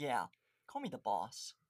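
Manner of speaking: ordinary delivery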